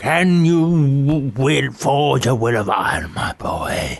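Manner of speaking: slow, drawn-out wizard voice. Retelling a bank advert where Peter O'Toole plays Merlin: imitating Peter O'Toole as Merlin. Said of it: "he wields a big hammer and he goes".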